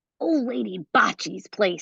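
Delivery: spoken in a hiss. A kid points out a neighbor's house to the narrator, hissed. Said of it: "he hissed".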